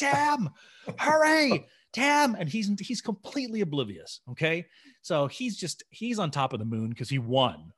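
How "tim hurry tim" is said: re-enacted scream, much higher, louder. Retelling a story, the speaker re-enacts their own scream. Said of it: "I'm screaming".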